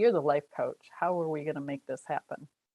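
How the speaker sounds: smug, cocky, self-assured, challenging tone. Retelling what the husband asked the life coach: imitating husband's cocky tone. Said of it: "he said it kinda cocky".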